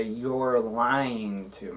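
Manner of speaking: slow, flat, falling tune on lying to me. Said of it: "I'm just gonna say it like a statement".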